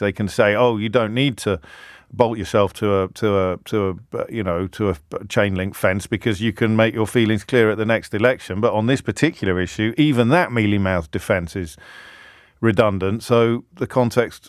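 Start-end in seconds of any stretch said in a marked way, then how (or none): none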